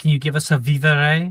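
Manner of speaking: loud, rousing yell. Acting out a character calling to the people around: yelling. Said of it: "and you yell".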